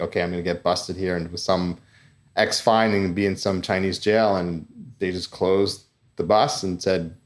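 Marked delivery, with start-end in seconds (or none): none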